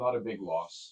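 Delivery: quiet muttering under breath. Player character reacting to news of missing dwarf: muttering under breath. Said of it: "I mutter under my breath".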